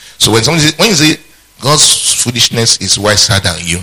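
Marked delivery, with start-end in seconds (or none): 1.6-3.8 slow, sarcastic, jabbing delivery. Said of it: "that's sarcasm".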